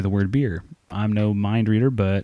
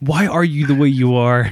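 loud ranting yell, acted out; 4 semitones higher, 6 dB louder than usual. Acting out scolding oneself for being broke: imitating Michael Scott yelling. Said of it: "Start yelling like you're fucking Toby and Michael Scott".

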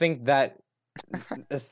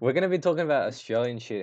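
ordinary talk, nothing marked

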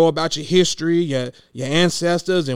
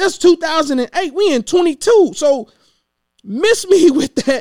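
heated, angry yelled voice; 11 semitones higher, 5 dB louder than usual. Answering another speaker's point in a conversation, yelling. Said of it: "Sorry that I'm yelling".

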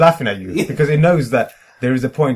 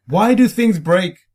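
put-on desperate tone, pitched up; 6 semitones higher, 3 dB louder than usual. Posing a question in a technology chat with a bit of put-on desperation. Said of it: "I thought I'd just say that with a bit of desperation in my voice".

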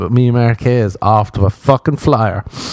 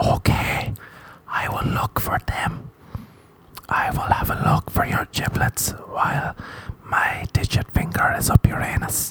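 soft, slow, hushed whisper. Acting out a doctor who answers the patient: doctor whispering. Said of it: "Doctor Frederic whispers in your ear".

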